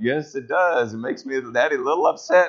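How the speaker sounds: quiet, strained, forced calm, barely holding together. Father retells answering his four-year-old's questions from the back seat, holding it together. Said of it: "trying to hold it together and go".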